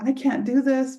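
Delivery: mock sobbing, tearful crying through the words. Retelling a dinner with her husband, imitating her own crying. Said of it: "and I'm crying".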